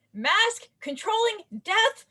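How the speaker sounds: slow, high, drawn-out yell.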